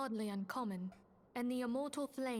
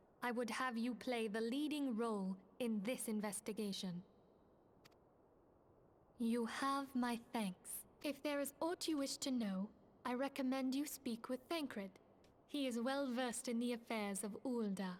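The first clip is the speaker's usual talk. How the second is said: mechanical, machine-like robot voice. Voicing a girl's lines of dialogue, in a robot voice. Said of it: "I wanted to use a robot voice for this girl".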